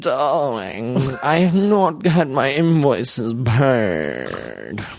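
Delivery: put-on slow, swooping slight German accent, "paid" stretched. Doing an impression of Udo Kier when asked: Udo Kier impression. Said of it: "can you do your impression".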